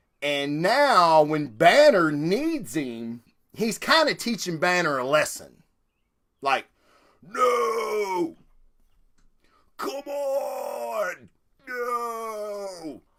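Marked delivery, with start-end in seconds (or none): 7.2-13.0 very slow, high, each "no" drawn out. Acting out the Hulk refusing to transform: Hulk transformation impersonation. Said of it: "that's my Hulk transformation, uh, impersonation".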